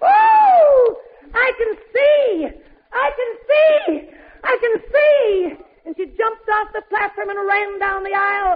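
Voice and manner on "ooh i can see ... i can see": mock, very slow, drawn-out, high joyful shout. Speaker retells how a woman who received her sight cried out, shouting. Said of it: "she began shouting".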